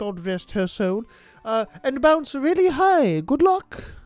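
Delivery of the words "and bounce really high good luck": put-on elderly British woman voice, higher, louder. Reading instructions aloud in an old British lady voice. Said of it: "And I sound like the old queen now".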